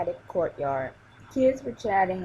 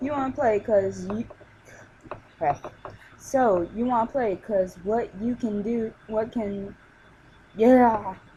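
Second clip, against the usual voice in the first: halting, stuttering, tripping and stumbling over words; 3 semitones higher than usual. Narrator reading a story aloud, stumbling over words. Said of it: "I stutter a lot and I stumble on words".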